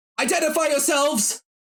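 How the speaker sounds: very high-pitched shouted yell. Voicing a hidden soldier behind sandbags: yelling a challenge. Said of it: "you hear somebody yell out from behind".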